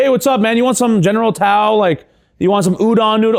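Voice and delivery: laid-back American dude voice. Joking about a Chinese restaurant worker talking without an accent: casual dude voice. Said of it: "sound like that at a Chinese restaurant".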